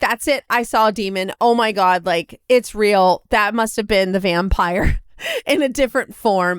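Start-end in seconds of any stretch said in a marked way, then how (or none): none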